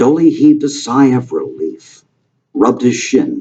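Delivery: ordinary delivery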